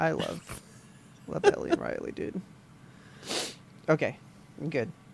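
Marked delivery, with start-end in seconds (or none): 0.0-2.4 teary, emotional, breathy near-whisper. Talking with another person about Ellie and Riley, wiping tears, tearful. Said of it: "I'm wiping these tears".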